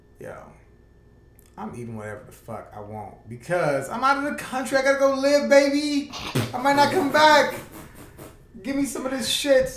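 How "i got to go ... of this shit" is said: loud, very high, put-on Jamaican accent. Telling the group about going out of the country; Jamaican accent. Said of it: "You gotta had a Jamaican accent when you said that".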